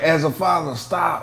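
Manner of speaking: slow, deliberate pronouncement. Retelling what Stephen A Smith said on air: imitating Stephen A Smith. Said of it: "he was like".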